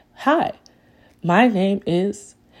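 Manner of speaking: very slow, stilted, robotic machine voice. Explaining why they'd use their own voice, showing the AI: robotic AI voice. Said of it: "AI sounds like this and it's very robotic".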